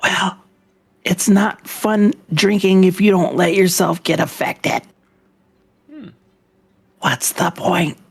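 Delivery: speaking in a whisper. Answering someone surprised at being affected by alcohol, whispering. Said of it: "I'm whispering because it's hilarious".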